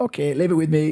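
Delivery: put-on gentle Scottish accent, pitched slightly high. Retell the answer of the man with the tactic board, in Tom's beautiful Scottish accent. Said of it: "in his beautiful Scottish accent".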